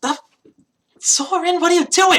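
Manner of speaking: very high, loud, baffled, bewildered character voice. Voicing a burned character who asks Soren what he's doing: bewildered NPC voice. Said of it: "staring at you in bewilderment".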